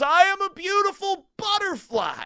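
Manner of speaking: high-pitched yelling. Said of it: "and he yells".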